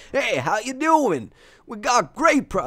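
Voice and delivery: bad, very high-pitched goblin auctioneer voice. The speaker voices a greedy auctioneer goblin from the game in a bad goblin impression. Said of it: "That was the worst goblin impression you've ever seen".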